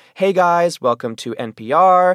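very slow, high, rising influencer accent. Demonstrating different influencer speaking styles: stereotypical lifestyle influencer accent. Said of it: "the stereotypical lifestyle influencer accent".

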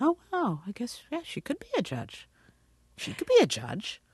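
put-on surprised tone. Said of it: "they were all like".

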